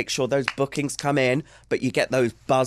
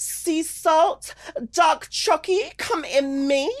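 very high, heightened, exaggerated, over-the-top delight. Asked to do it again the same way but more heightened, exaggerated delivery. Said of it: "Do it again there in that same way, but maybe more heightened?".

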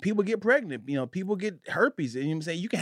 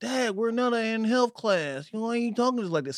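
play-acted, dry, sarcastic delivery; 3 semitones higher than usual. Retelling how the daughters answer talk about sex: imitating sarcastic daughters. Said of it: "my daughters are very sarcastic".

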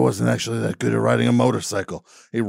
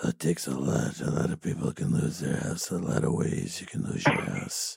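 hushed, breathy, soft whisper, barely voiced; 10 semitones lower, 10 dB quieter than usual. Recalling a video of an actor talking about losing houses: imitating Ron Perlman. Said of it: "I like that video where he's like".

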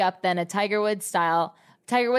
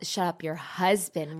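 normal talking voice

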